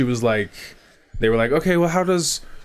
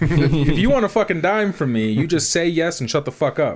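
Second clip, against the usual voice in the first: mock super aggressive voice, higher; 4 semitones higher than usual. Retelling what they said about medical bills: imitating super aggressive talk. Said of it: "super aggressive".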